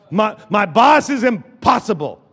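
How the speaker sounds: ordinary talk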